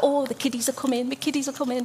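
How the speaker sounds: put-on thick, broad Birmingham accent, heavily laid on. Recalling how Mavis talked about her grandkids, Mavis's strong Brummie accent. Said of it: "in the most Brummie accent".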